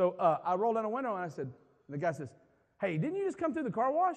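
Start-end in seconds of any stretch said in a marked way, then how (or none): 2.8-4.2 mock curt, sudden, abrupt, very high-pitched delivery. Retelling what a car wash worker asked him: imitating an abrupt tone. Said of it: "in a sort of abrupt tone".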